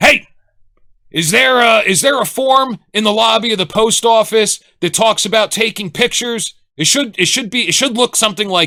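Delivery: play-acted, really angry voice at a high pitch. Telling the listener how they sounded when they called, imitating an angry caller. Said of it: "you just sound really angry on the phone. You go".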